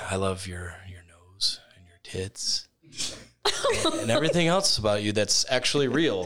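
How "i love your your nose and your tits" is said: very low, seductive, sexy voice. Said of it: "Say it in a sexy tone".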